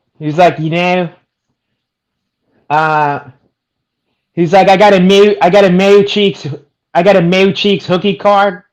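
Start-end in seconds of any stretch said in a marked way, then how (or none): 4.7-8.5 heavy, laid-on put-on Philadelphia accent. Imitating a fighter from his post fight, thick Philly accent. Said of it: "thick, uh, fucking Philly accent".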